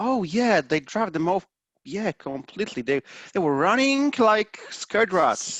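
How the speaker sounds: sing-song, skeptical, sarcastic delivery. Voicing a character answering the party: sarcastic and doubtful. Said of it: "a little doubt and a little sarcasm".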